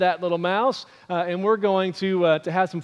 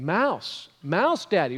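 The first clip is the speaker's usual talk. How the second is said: plain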